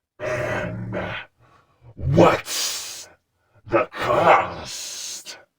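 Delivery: hissed-out, hissing voice. Reading a story, a voice replies to someone offering a tidbit, hissing voice. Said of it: "Came a hissing voice".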